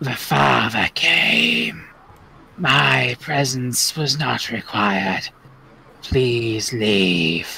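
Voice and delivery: very deep, low, frightening voice. Playing the guardian sending the visitors away, in a scary voice. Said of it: "Bye, scary voice".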